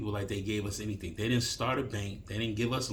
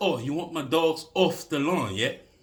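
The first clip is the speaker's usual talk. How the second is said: put-on English accent, raised and high-pitched; 6 semitones higher, 6 dB louder than usual. Retelling an argument with a dog owner, imitating her english accent. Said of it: "she hit me with this English accent".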